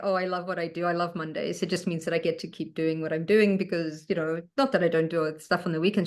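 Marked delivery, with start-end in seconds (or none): none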